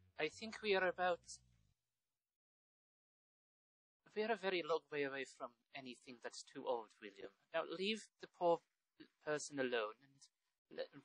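put-on Irish-accented voice. Speaking in character to William, telling him to leave someone alone: Irish accent. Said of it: "I just went Irish for some reason".

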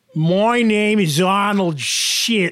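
slight touch of Australian accent. Trying out a comedy character's introduction; Arnold Shit, Australian-sounding accent. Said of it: "and I'm Australian there".

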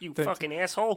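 high cartoon frog voice. Doing cartoon impressions for another speaker and making the frog curse: Kermit the Frog voice, cursing. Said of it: "It's even funnier to make him curse".

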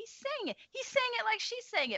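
excited realization, pitched way up high. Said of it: "and I was like".

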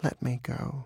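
quiet, soft, imploring, beseeching tone. The fox begs the dog to let him go, soft, beseeching plea. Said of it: "He spoke softly and beseechingly".

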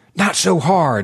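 fussing, protesting exclamation. Reading a story aloud, the doc objecting to rough handling: fussy cry. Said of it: "the doc cried, fussily".

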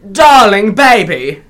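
clumsy, unconvincing put-on British accent. Describing a man who reminds them of a film role, the speaker tries a bad British accent. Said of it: "I don't do a good British accent".

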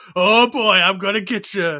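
high, slow, loud, taunting cartoon frog villain voice. Retelling a cartoon episode where a villain freezes two heroes: imitating the fat frog guy. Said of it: "he's just like".

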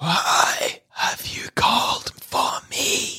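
whispering. Voicing a spirit who asks why she was called: whispering spirit. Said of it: "she whispers at you".

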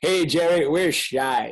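put-on Texas drawl. Imagining the draft-day war room, Stephen Jones turns to Jerry Jones: Texas drawl. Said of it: "in his Texas drawl and says".

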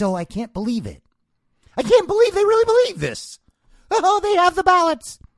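very high-pitched, wild, crazy put-on voice. Mocking how a TV host talks: Rachel Maddow's crazy voice. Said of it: "she does her crazy voice".

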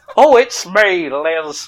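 every word drawn out slowly, regal manner. Joking about how she talks: imitating the Queen. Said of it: "I don't know why she talks like that".

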